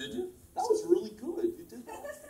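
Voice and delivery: astonished, very high, swooping surprised voice. Reacting to hearing the other speaker drew that cover: surprised. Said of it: "Why you sound so surprised?".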